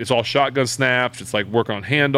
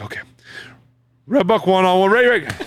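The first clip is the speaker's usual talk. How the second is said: acted over-eager, excited, rushed, high-pitched tumbling words; 8 semitones higher, 4 dB louder than usual. Retelling a player rushing the huddle call, imitating Benjamin sounding super excited. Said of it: "He's super excited".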